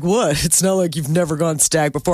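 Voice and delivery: jokingly smug, playful mock-smug tone. Imitating a man's teasing reply to her, retelling a jokingly smug remark. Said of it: "So jokingly smug about it".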